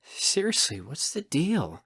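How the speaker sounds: grumbling mutter under the breath. Reading a story, the narrator waits impatiently at a door: muttering. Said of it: "I mutter".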